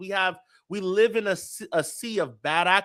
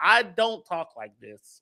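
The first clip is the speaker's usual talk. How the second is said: normal talking voice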